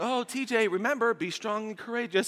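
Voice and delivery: put-on high, sweet little grandmother voice. Recalling his grandma calling to him as he ran through church, imitating grandma's sweet little voice. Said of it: "in my grandma's sweet little voice".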